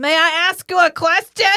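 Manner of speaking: booming, drawn-out, very loud. Retelling a scene between two characters, asking a question very loudly. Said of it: "very loudly".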